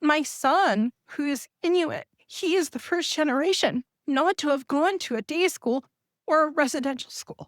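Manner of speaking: emotional, voice rising. Addressing an audience that includes survivors, about the speaker's son, getting emotional. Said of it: "I don't mean to get emotional".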